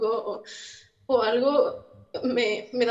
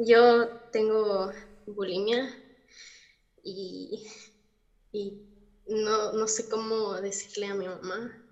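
strained voice close to crying, struggling through; 2 semitones lower than usual. Confiding in a listener who offers comfort, on the verge of tears. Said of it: "yo voy a llorar".

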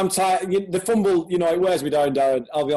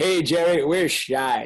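put-on Texas drawl. Imagining what gets said in the war room on draft day, Stephen Jones Texas drawl. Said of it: "in his Texas drawl".

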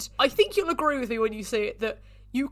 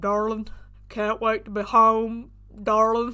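put-on dopey, dumb-sounding, dim-witted voice; 2 semitones lower than usual. Speaker imitating a man's voice from a film, in a dopey put-on voice. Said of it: "that is the voice I use to play dumb people".

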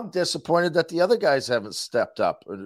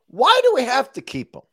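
riled-up, wound-up outburst, shrill, very high, raised; 10 semitones higher, 6 dB louder than usual. Arguing with the others about keeping a player: worked up. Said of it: "now I'm wound up".

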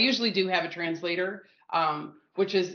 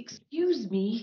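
odd, weird put-on Danish accent; 4 semitones higher than usual. Retelling how Steve went up to the counter guy: imitating Steve's weird Danish voice. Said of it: "turns on his weird Copenhagen Danish voice".

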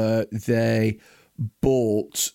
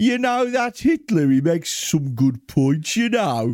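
high, put-on Birmingham accent; 7 semitones higher than usual. Joining a bit as a 1940s German: put-on Brummy accent. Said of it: "let's try and do that".

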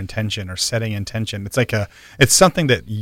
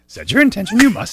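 very high-pitched creature voice; 11 semitones higher, 4 dB louder than usual. Urging someone to do an impression: Yoda voice. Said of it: "Do a Yoda impression".

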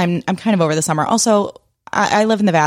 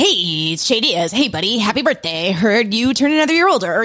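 put-on terrifying voice, pitched higher; 3 semitones higher than usual. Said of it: "what was that voice?".

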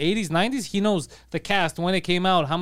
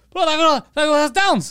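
mock screaming, much higher and louder; 10 semitones higher, 6 dB louder than usual. Speaker retells what Guido yelled, imitating Guido screaming. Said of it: "He's just screaming".

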